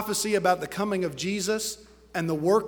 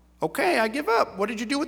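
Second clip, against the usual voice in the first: talking-parrot voice, much higher pitched; 4 semitones higher than usual. A joke teller voices the parrot finally speaking to the magician: parrot voice. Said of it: "That's my parrot voice".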